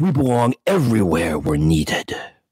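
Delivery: earnest, campy, noble TV superhero voice. Telling a story, speak as Batman answering Moriarty, in your best Adam West voice. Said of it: "in my best Adam West voice".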